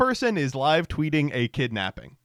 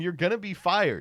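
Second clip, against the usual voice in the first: mild, toned-down acted yelling; 3 semitones higher, 4 dB quieter than usual. Retelling passengers shouting at the driver: imitating people screaming. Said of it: "People are screaming at him".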